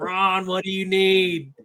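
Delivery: drawn-out calling-out yell. Retelling calling out to someone up ahead on the field: retelling a yell. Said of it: "I'm just yelling at him".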